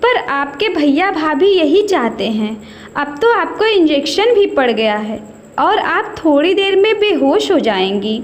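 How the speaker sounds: plain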